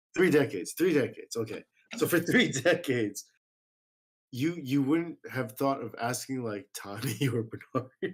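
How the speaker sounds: giggling, snickering through the words. In conversation on a show, giggling while talking. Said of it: "I can't stop giggling and, and snickering".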